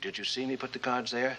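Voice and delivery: ordinary talk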